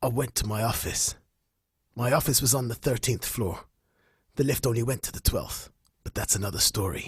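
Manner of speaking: low, noir-style narrator voice with fake American accent. Asked to go on, speaker does his pulp narration in a pseudo-American narrator voice. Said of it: "What what accent was that?".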